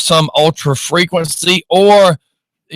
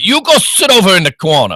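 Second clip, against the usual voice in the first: fake Czech accent with swooping pitch; 4 semitones higher than usual. Moving Mike's chair as a joke, the speaker sends him to the corner: fake Czech accent, yelling. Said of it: "yelled at by some guy from Czechoslovakia".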